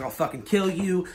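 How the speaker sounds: ordinary talk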